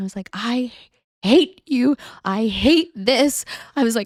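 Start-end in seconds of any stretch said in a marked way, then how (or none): 0.3-3.4 imitated yelling, higher. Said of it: "screaming at him".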